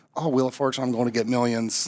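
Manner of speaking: ordinary talk, nothing marked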